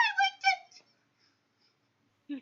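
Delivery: put-on tiny yappy voice, very high and fast. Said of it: "you hear in a little yippy voice".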